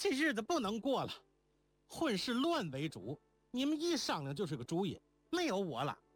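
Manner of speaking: flustered, furious, agitated, very high voice. Reading a novel, a character exclaims to the others, angry and agitated. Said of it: "莲宝却气急道".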